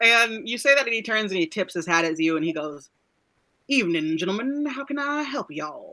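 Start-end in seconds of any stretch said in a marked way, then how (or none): 3.7-5.9 put-on character voice, swooping and sing-song. Voicing a whistling man who answers praise, unexpected put-on voice. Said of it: "I wasn't expecting that kind of voice".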